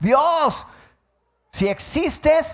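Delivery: acted shouting. Retelling how an angry father shouted in the street: imitating father shouting at God. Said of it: "empezó a gritar".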